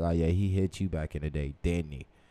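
ordinary delivery

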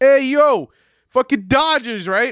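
high-pitched, shrill, loud hollered call-out. Retelling being yelled at in a parking lot: imitating a guy yelling. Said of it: "I got yelled at in a parking lot by a guy".

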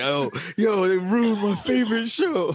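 very high, play-acted, wailing crying whine. Speaker retells what Odie texted, imitating Odie crying. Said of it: "crying like".

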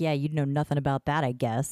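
put-on sarcastic tone. Retelling a story, a hired bodyguard speaks to the devil: retelling a sarcastic remark. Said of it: "sarcastically to the devil".

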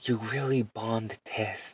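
put-on, loud stage whisper. Retelling what Miss Boomer said in class: imitating Miss Boomer's loud whisper. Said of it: "she was all whispering, but, like, not even a good whisper".

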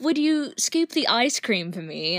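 put-on British accent. Retelling what a dinner companion asked her, imitating a british accent. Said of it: "he has a British accent".

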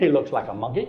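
blurted out as fast as possible. Retelling own answer to dad's question: imitating own quick blurt. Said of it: "just as quickly as I could".

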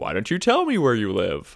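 booming, loud automated announcer voice, swinging pitch. Chatting about Seinfeld, one speaker does Kramer's Moviefone voice. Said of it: "he does the whole movie phone".

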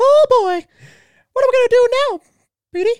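very high-pitched, cartoon-style voice. Speaker demonstrates how cartoon voices differ, doing a Mickey Mouse voice. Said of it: "Mickey Mouse is more of a soft tone".

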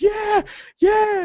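very high, loud, triumphant scream at full lung.

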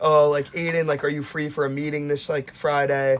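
usual speaking voice

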